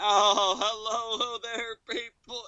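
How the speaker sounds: fake, very slow, high phony preacher voice. Retelling a pastor's greeting in a sermon video: imitating a phony pastor voice. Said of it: "Just even in his voice".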